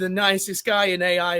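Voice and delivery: plain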